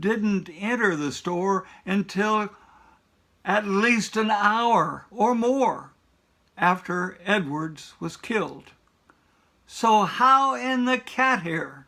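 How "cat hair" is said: strong stress on "cat hair". Arguing against the state's theory: stress on CAT HAIR. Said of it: "I emphasize that word cat hair".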